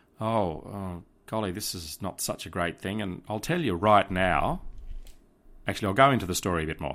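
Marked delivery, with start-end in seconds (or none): 0.2-3.0 hushed, soft murmur under the breath. Retelling what people at a cafe were saying: imitating hushed tones. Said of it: "in hushed tones".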